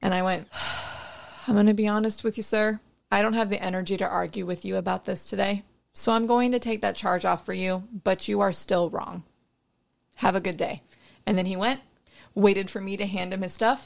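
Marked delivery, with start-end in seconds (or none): none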